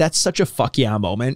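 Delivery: plain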